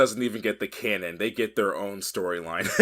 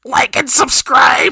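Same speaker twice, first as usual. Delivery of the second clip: very high, squeaky, loud tiny ant voice; 12 dB louder than usual. Ending a video outro with an ant on the microphone, in an attempted ant voice. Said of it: "is that supposed to be an ant voice?".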